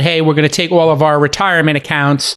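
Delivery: ordinary talk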